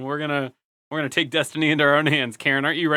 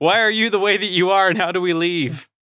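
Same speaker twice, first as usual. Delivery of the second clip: loud hollering yell, in character; 4 semitones higher, 3 dB louder than usual. Playing a character who yells at a monster: yelling in character. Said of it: "Are you just yelling at that".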